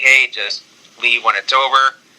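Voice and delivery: ordinary talk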